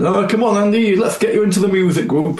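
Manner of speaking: put-on north-east England accent. Retelling what a church elder said to the speaker in the school hall: northeast English accent. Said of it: "with his northeast accent".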